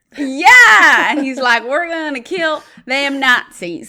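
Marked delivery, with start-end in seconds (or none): 1.7-3.9 Southern accent impression. Praising a movie character, quoting his line in a Tennessee Southern accent. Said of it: "this like Tennessee born Southern accent".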